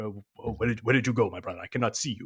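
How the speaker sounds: put-on Nigerian accent, calling out. Speaker recounts messing with someone by doing the African Nigerian voice. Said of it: "doing the African Nigerian voice".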